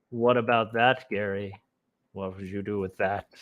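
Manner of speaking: put-on sinister, menacing, creepy, faintly threatening voice. Repeating own question to show how it came out: mock creepy tone. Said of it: "sounded a little creepy".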